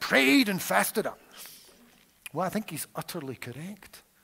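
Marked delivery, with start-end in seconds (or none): 0.0-1.2 very loud, high, clumsy fake American accent. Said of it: "It wasn't the best American accent".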